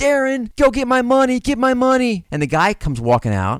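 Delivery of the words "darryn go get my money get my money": shrill, very high, frantic scream. Retelling how she ran out of a man's house screaming to him, imitating her screaming. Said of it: "She's running out, screaming".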